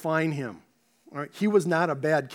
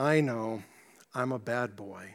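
put-on young boy voice, low, small and dejected; 6 semitones lower, 6 dB quieter than usual. Retelling what a young boy said when asked about a spanking; imitating a dejected young boy. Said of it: "with a very dejected voice".

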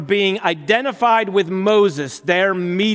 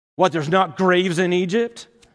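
put-on sarcastic delivery. Retelling what the frightened people said at the sea: imitating a sarcastic retort. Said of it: "They even get sarcastic".

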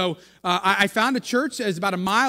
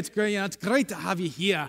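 good put-on Scottish brogue; 4 dB quieter than usual. Retelling how people at the church greeted him, in a good Scottish brogue. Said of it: "in a good Scottish brogue".

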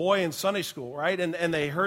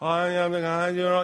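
put-on muffled mumbling, as if mouth full. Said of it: "he got all this stuff in his mouth".

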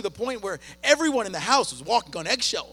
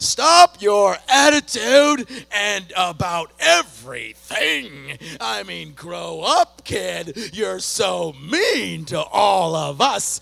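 put-on toned-down angry scolding, very slow and drawn out; 6 dB louder than usual. Retelling a phone argument with a teenager: retelling angry words. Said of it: "angry, explosive words galore".

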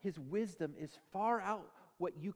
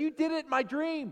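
play-acted shrill, very high, very loud, indignant angry outburst; 9 semitones higher, 8 dB louder than usual. Retelling a sermon story of a wife woken up angry: imitating someone mad. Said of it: "She was mad".

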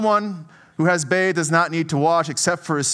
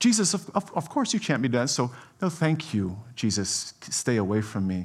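mock sweet, pleasant, sing-song polite tone; 6 semitones lower, 6 dB quieter than usual. Retelling a disciple refusing to let his teacher wash his feet: imitating a pleasant polite refusal. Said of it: "He's trying to be nice. He's pleasant".

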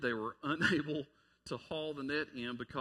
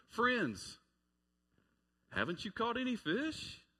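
knowingly sarcastic, swooping sing-song; 9 semitones higher than usual. Reading Jesus's question to the fishing disciples: put-on sarcastic tone as Jesus. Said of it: "it's almost like he's being sarcastic".

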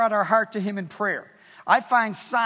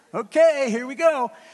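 put-on, a little sarcastic, very slow, loud, drawn out; 4 semitones higher, 6 dB louder than usual. Retelling own words to the Lord in the office: retelling own sarcastic prayer. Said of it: "I was a little sarcastic".

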